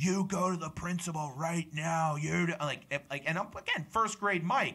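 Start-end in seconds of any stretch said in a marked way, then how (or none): 0.0-2.2 put-on screaming and shouting. Speaker recounts a woman screaming at him in first grade; retelling a scream. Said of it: "she screams at me, just absolutely screams at me".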